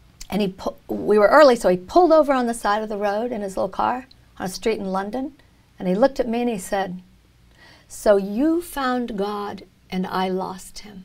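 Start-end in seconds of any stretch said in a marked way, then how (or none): 7.9-11.0 put-on very slow delivery with a heavy, thick German accent. Retelling a relative's first words in the car: imitating a thick German accent. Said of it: "in a very thick German accent".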